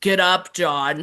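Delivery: put-on full-on grown man voice, nothing childlike. Imitating a grown-up child actor telling someone to get up: imitating a full-on man voice. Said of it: "full-on man voice".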